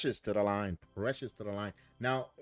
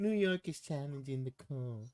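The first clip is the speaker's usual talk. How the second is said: soft-spoken, overly correct, prim announcer voice. Mocking how he announced the challenge, imitating an overly proper announcement. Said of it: "He's so proper. He goes".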